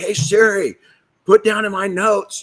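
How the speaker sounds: put-on yell. Retelling calling out to Siri to take notes: imitating own yell. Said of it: "and I'm yelling".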